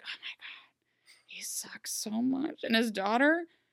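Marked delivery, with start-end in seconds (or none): 0.0-2.6 very slow, drawn-out, secretive hushed whisper. Retelling a scene where a character whispers a complaint: imitating a whisper. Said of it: "whispers it to her".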